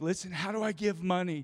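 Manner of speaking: put-on, high, tearful, crying, pleading voice. Retelling a phone call from a caller who was crying: imitating a crying caller. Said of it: "But this lady is crying".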